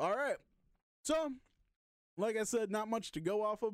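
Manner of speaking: talking with mouth full. Speaker has just bitten into a brownie while talking, talking with mouth full. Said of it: "I took a bite of a brownie".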